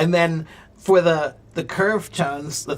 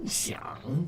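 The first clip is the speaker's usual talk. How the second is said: exaggerated deep dipping-then-rising tone on xiang; 13 dB quieter than usual. Teaching the Chinese word for think, saying xiang with exaggerated tone. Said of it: "you have to really make that xiang".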